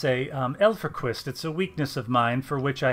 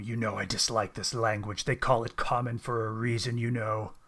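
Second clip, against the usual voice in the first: low, soft growling dog voice; 3 semitones lower, 5 dB quieter than usual. Narrator voicing a dog who answers in common, low growling dog voice. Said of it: "he growls low and says in common".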